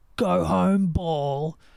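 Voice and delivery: mock golfer voice, screaming. Retelling a movie bit where a golfer screams at the ball: imitating Happy Gilmore screaming. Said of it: "he screams at the ball".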